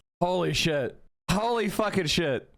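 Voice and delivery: words breaking up into hard laughter. Reacting to something funny in front of chat, laughing hard while talking. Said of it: "I'm sorry for laughing so hard".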